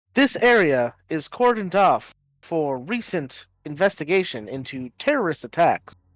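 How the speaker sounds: automated machine voice with announcement delivery. Voicing a whirring machine that warns a player character to leave: voicing a whirring machine. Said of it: "it comes whirring up to Amity".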